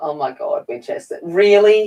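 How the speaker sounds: words spoken through a fit of laughter. Reacting to a kitten climbing into a box, laughing while talking. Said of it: "I'm just laughing at my, my kitten".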